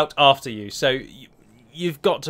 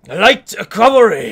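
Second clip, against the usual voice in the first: bad put-on loud, high Japanese game-narrator voice; 6 semitones higher, 7 dB louder than usual. Describing a game's cavalry unit, announce its name in a terrible Japanese game narrator imitation. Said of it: "my terrible imitation of a Japanese game narrator".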